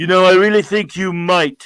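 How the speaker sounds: big, booming, very loud voice. Retelling a tv scene where a voice answers: imitating a booming voice. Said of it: "You hear that booming voice".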